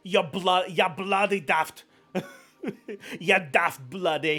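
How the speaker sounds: jokey, high, slow, drawn-out put-on Scottish accent. Reading a chat member's name aloud for fun: scottish accent. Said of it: "I want to read it in a Scottish accent".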